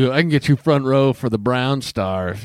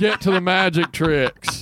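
put-on drunk man yelling voice, higher; 8 semitones higher than usual. Retelling what Drunk Argus yelled at Chuck: imitating drunk Argus yelling. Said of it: "Drunk Argus says".

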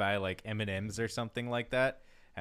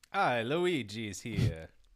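put-on vampire-like voice, much slower. Just introduced on the show, the speaker says hi in a failed Luigi voice. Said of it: "that was more like a Dracula".

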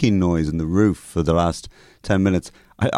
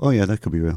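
ordinary talk

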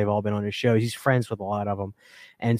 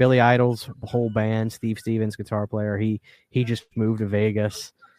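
ordinary delivery

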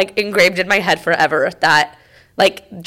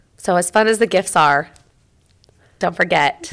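emotional, voice catching and choking up. Speaker sharing a Christmas message, getting emotional. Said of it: "I hate when I get emotional".

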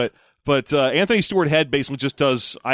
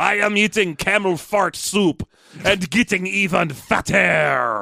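put-on ridiculous, overdone, absurd, high-pitched French accent; 5 semitones higher than usual. Retelling how they always answered others as French King, in an absurd French accent. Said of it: "always talking with an absurd French accent".

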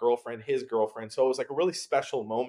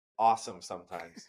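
voice dripping with sarcasm; 6 semitones lower than usual. Describing often packing up and moving across the country: sarcastic.

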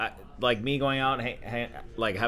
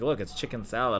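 plain

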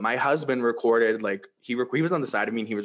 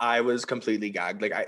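usual speaking voice

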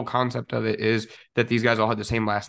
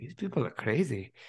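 English spoken in a put-on German accent; 3 semitones higher, 7 dB quieter than usual. Quoting a man who went from Germany to Texas, German accent. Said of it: "Was that your German accent?".

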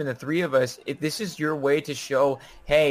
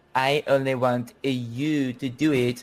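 fake French accent, very slow and drawn way out; 2 semitones lower than usual. Acting out what she might say, in a put-on french accent. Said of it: "why are you French?".

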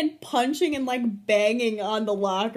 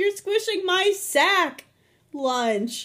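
high voice broken by a pause; 7 semitones higher than usual. Repeating the quoted line to show the pause: pause before Lunch. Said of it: "It's like the pause".

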